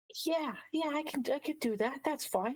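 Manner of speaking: very high, respectful, polite indoor voice. Asked for an inside voice, respectful of other patrons; quiet inside voice. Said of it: "your best sort of like inside voice".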